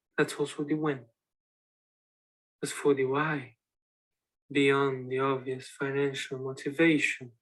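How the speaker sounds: flat menacing mastermind tone. Performing a taped monologue as a criminal mastermind: monotone, trying to sound menacing. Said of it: "It's so monotone".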